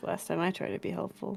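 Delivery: muttering quietly under her breath. Playing a character after a refused offer of help: muttering under her breath. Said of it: "she says under her breath".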